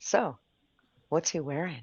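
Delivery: put-on eerie, creepy, sinister voice. Speaker questioning another speaker: creepy voice. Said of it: "I feel like I need to say this in a creepy voice".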